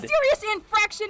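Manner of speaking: put-on shouting voice. Retelling how an officer started yelling at them: imitating an officer yelling. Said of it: "absolutely starts yelling at me and Riley".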